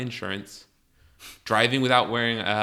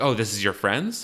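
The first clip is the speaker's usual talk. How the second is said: ordinary talk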